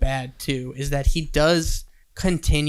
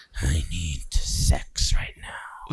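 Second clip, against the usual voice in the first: put-on slow, breathy, whispered creepy old man voice; 11 semitones lower, 4 dB quieter than usual. Mocking how creepy old men talk: imitating a creepy old man. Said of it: "those creepy old men who are just like".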